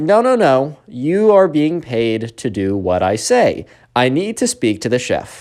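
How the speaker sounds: slow, drawn-out, demanding and bossy voice. Retelling what the Karen told the caterer: imitating the Karen. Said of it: "And the Karen's like".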